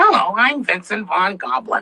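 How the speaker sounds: slightly high, heavily raspy voice. Showing the character voice that came to him on first seeing him, Vincent Von Goblin voice. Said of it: "a little bit high pitched, but with a heavy rasp".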